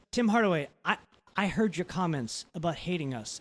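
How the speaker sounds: plain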